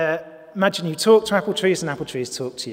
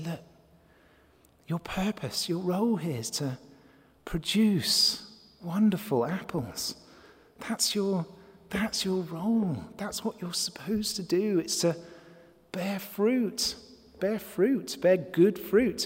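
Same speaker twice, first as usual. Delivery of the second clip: softer, gentler voice, quieter and slower; 2 semitones higher, 7 dB quieter than usual. Speaker shows how you would speak to an apple tree, in a slightly softer voice. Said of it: "put on a slightly softer voice and say".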